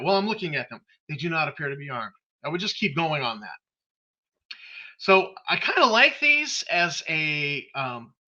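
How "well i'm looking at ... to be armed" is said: dry, deadpan, matter-of-fact delivery. Showing how a game master tells players something: deadpan. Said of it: "very deadpan".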